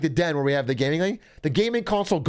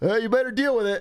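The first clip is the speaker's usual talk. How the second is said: put-on giggling while talking, pitched higher; 4 semitones higher than usual. Retelling a dad's reply on the phone: imitating dad giggling while talking. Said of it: "My dad's giggling like a fucking".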